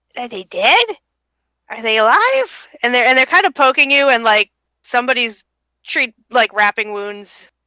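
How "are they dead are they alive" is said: tiny creature voices, bouncing, swooping pitch. Voicing kobolds over the waking adventurers: little kobold voices. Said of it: "little voices saying".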